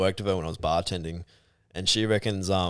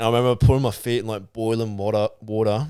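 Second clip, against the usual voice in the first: ordinary talk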